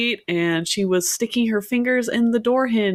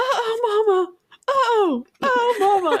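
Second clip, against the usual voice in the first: put-on toddler voice, higher; 12 semitones higher than usual. Retelling hearing her toddler in the bathroom: imitating her toddler. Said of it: "my toddler".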